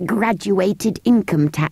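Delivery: ordinary delivery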